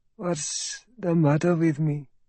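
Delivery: thick, barely awake voice. Alatas, waking in a bed in pain, asks Sergeant Hafiz, thick voice. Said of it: "said in a thick voice".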